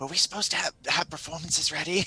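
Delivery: hushed, quiet half-whisper. Voicing a scarred elven ranger asking her teammates something: half-whispering. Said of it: "whispering to her teammates".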